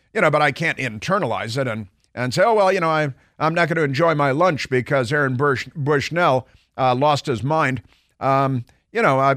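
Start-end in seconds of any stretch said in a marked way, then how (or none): none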